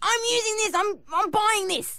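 put-on indignant child voice.

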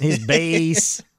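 put-on Wisconsin accent, drawn out. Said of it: "My Wisconsin accent came out there".

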